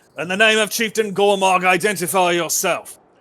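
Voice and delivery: shouting out. Voicing a guard who orders the party to identify themselves: calling out. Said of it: "you hear another voice call out".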